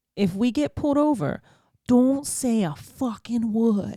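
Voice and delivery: put-on Boston accent. Retelling what the man told him before making him drive, imitating his Boston accent. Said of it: "in his Boston accent".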